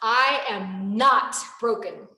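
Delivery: slow, firm, wholehearted conviction. Showing a mantra said the right way: said with conviction. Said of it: "say it with conviction".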